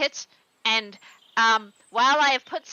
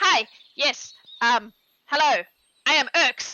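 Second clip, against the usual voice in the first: very slow, fumbling, stop-start halting voice. Voicing a guard character greeting visitors: voicing Urks. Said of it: "And he salutes badly".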